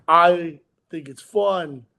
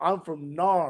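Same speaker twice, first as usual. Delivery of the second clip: put-on Australian accent; 3 dB quieter than usual. Retelling how a man says where he is from: imitating Joel's Australian accent. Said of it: "because he has an Australian accent".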